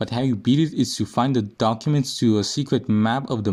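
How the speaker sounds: ordinary talk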